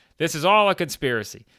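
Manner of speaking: mock, high, loud, furious ranting yell. Retelling a wrestling segment where a wrestler goes off: imitating someone yelling. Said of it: "She just starts yelling".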